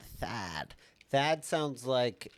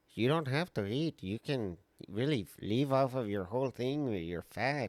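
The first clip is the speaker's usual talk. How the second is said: put-on Armenian accent. Speaker quoting the Armenian guy from My 600-lb Life: Armenian accent impression. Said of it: "pretty good accent. First time I ever tried".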